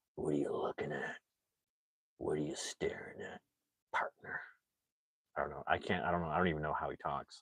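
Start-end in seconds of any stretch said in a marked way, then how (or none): 0.2-4.4 breathy, hushed whisper with a tough edge. Doing an impression after a viewer's comparison: Clint Eastwood voice. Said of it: "He's like".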